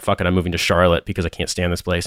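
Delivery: plain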